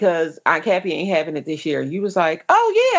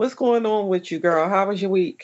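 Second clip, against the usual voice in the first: plain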